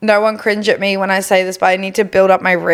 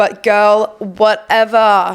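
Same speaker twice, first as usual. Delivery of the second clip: almost American accent, slipping in unplanned. Giving hot girl summer advice, slipping into an american accent. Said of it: "I almost said that with an American accent".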